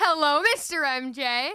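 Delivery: big enthusiastic voice. Giving a big hello after being asked: big enthusiastic hello. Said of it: "Give me a big hello".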